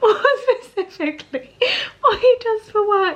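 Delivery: very high speech through full-on crying tears. Answering a viewer question about a husband's job, crying while talking. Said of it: "I'm full on crying".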